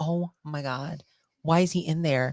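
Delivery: normal talking voice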